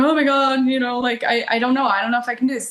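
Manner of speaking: mock scared, panicked, terrified, spiralling fretting. Retelling what she told the guy she was seeing: retelling her own panic. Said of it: "that kind of panic".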